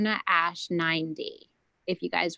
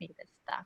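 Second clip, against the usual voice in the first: much softer, hushed, kept-down voice. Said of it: "Now I have to keep my voice down".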